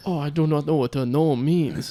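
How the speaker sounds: badly done, put-on fake French accent. Doing a comic bit during a conversation: put-on French accent. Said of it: "that was my French accent".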